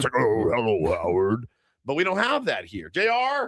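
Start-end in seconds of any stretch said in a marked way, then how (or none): 0.2-1.5 low devilish voice. Describing someone's voice-changing mic button, acting out its devil voice. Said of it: "I'm going to talk like the devil now".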